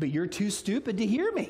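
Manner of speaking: patronizing fatherly voice.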